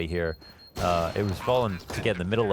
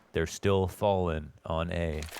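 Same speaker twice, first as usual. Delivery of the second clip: grave, weighty delivery with gravitas; 2 semitones lower, 3 dB quieter than usual. Repeating a line, this time with gravitas. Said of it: "I should probably say that with, a gra with gravitas".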